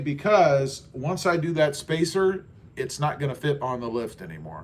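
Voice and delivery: ordinary talk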